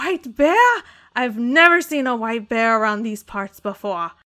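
put-on frightened, panicky voice. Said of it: "screams like he's just terrified".

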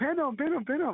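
very high, repeated, mock angry shouting yell. Retelling a match where a coach kept shouting from the side: imitating coach yelling. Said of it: "kept yelling".

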